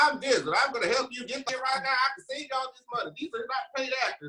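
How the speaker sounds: very high, aggressive, yelling infomercial announcer voice. Imitating lawyers' TV infomercials, where they yell: imitating Jim Adler yelling. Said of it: "They yell in all of their infomercials. They're like".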